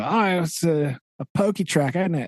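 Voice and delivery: fake Australian accent. Speaker imagines what Australian scientists would say, in a bad Australian accent. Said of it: "Sorry for the bad accent".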